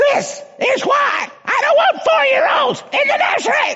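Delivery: top-of-the-lungs, very high, shrill put-on scream. Retelling a church member's complaint about the nursery: imitating a woman screaming. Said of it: "she was screaming to the top of her lungs".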